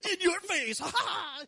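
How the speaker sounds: high, loud, triumphant, in-your-face gloating yell.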